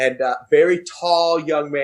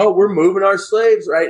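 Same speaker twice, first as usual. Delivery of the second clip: put-on Southern accent, raised and high in pitch; 5 semitones higher, 4 dB louder than usual. Retelling a student's classroom performance of a settler moving west, in a southern accent. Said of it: "so he has this Southern accent".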